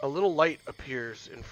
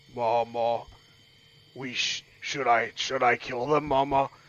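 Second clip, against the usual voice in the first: put-on teeny tiny little frog character voice. Retelling a scene to a listener, in a teeny tiny frog voice. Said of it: "teeny tiny frog says".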